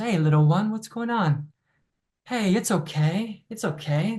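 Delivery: play-acted calm, soothing, reassuring tone. Acting out a warm presence comforting a scared little one, in a soothing voice. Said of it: "There's a soothing voice".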